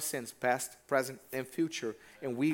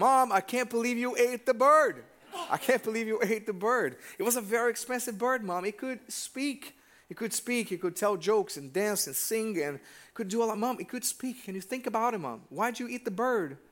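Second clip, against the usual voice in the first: very mad, high-pitched, angry ranting outburst; 8 semitones higher than usual. Retelling a joke in which a son scolds his mom: imitating a very mad son. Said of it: "So he was very mad".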